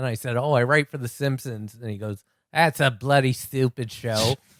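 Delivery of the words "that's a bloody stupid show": put-on Australian accent with blunt delivery. Retelling what a man showing them around said, Australian accent. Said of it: "I'll tell the story with my great Australian accent".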